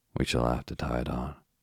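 ordinary delivery

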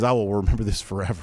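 ordinary talk

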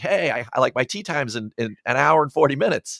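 plain

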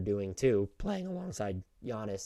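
voice cracking mid-phrase. Mid-sentence while making a point, voice cracking. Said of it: "as my voice cracks".

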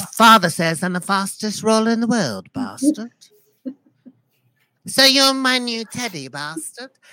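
put-on little boy voice. Showing off a new character, in a little boy voice. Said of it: "a little boy from the medieval times".

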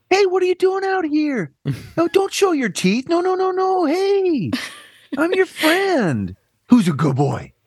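sweet high-pitched voice. Playing a werewolf hunter addressing a werewolf, in a sweet high-pitched voice. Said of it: "I feel like a high voice would work".

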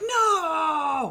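crushed, high groan of "no".

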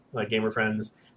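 ordinary delivery

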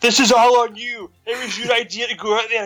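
imitated screaming voice. Retelling how a character screams at Zoe: imitating someone screaming. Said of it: "she just screams at Zoe".

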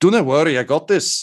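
high-pitched shout tossed back over the shoulder. Voicing a man mashing a button behind a desk: yelling over his shoulder. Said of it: "yell over his shoulder".

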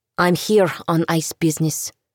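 plain

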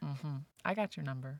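ordinary talk

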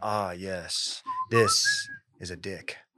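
monocled explorer voice, very drawn out, swooping pitch. Picturing an archaeologist in a monocle finding an object: imitating a monocled archaeologist. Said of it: "a guy with, like, a monocle and, like, a, a Indiana Jones hat being like".

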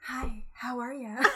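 sinister, very slow, drawn out. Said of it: "being able to mimic that".

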